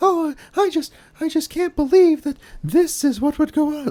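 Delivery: very high, mannered, affected classic-movie starlet voice. Describing how actresses talk in old movies, in an affected old-Hollywood actress voice. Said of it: "nobody talks like that".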